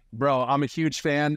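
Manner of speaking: plain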